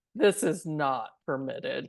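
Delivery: completely dry delivery. Imitating the soldier Tate from the scene: dry Tate impression. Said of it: "And he's just so dry".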